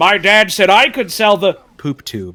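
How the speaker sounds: loud, punched-out, dubbed-over commercial voice. Quoting a line from a comedy ad: imitating Eric Wareheim's voice. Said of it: "very clearly Eric Wareheim's voice".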